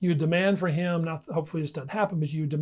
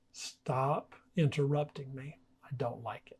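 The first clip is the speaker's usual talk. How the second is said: calm, soft, very serious, firm; 3 semitones lower, 7 dB quieter than usual. Showing how to set a boundary without raising your voice: firm but soft and serious. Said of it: "I can talk like this and be very serious".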